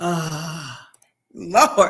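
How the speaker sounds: loud, drawn-out, swamped, overwhelmed sigh and outburst. Demonstrating how someone feeling overwhelmed sounds, with an overwhelmed sound. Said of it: "I'm going to do my overwhelmed sound again".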